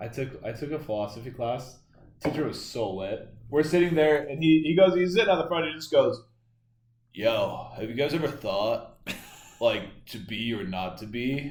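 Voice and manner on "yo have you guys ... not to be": acted, spaced-out, slow, stoned-sounding drawl. Retelling a philosophy teacher's class talk: imitating a teacher talking high. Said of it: "talked like he was high the whole time".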